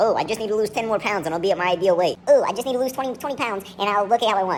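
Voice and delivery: mocking put-on mimicking voice. A presenter quotes what people often say, in a mocking put-on voice. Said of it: "I shouldn't do that voice. I'm not trying to mock people".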